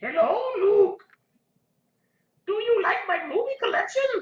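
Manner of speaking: squealing loudly and badly. Showing off a movie collection: worst Yoda impression. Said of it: "That is the worst Yoda impression ever".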